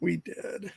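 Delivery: soft, sheepish, embarrassed-sounding voice. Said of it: "we both sheepishly were like".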